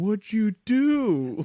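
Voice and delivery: the word "do" drawn out long. Retelling the other speaker's reaction to a cheering stadium: Chris Farley in Tommy Boy impression. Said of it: "you turned into Chris Farley and Tommy Boy looking at me going".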